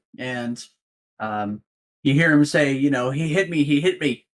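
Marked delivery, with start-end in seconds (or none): 2.7-4.2 put-on goblin voice, tearful, half crying. Describing two goblins entering a room and voicing one, imitating a crying goblin. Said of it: "one of them is sort of crying a little bit".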